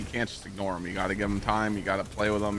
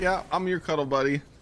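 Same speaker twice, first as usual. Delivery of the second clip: high, blissful, snuggly pet dog voice; 7 semitones higher than usual. Voicing a dog lying on his back for a small girl: voicing the dog Thor. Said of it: "he lays on his back and he's like".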